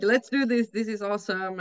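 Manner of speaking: ordinary talk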